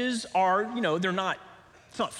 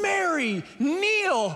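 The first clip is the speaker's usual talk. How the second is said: yell, pitched higher; 9 semitones higher than usual. Parent retells rushing across the room toward a child, retelling her own yell. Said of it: "I am yelling".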